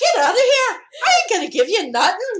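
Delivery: very loud, swooping, bad put-on Irish brogue. Acting out a man turning a woman away in the story, bad irish accent. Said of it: "Sorry for the bad Irish accent".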